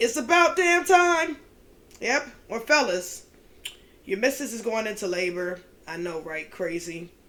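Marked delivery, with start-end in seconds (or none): 0.0-1.4 very high, loud, shouted declaiming delivery. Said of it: "In my [name] voice".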